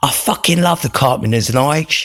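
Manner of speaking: put-on very high-pitched North London Cockney accent. Retelling what the speaker's sponsee said in the car, imitating a Cockney accent. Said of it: "in his Cockney Northern accent".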